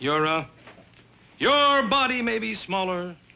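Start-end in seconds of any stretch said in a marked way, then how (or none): 1.4-3.1 sarcastic, jabbing tone. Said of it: "your primitive earthly sarcasm".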